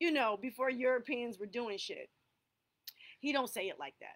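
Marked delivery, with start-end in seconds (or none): none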